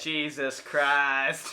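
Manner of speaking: very slow, loud, exasperated groan.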